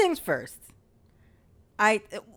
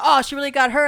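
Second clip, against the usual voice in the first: plain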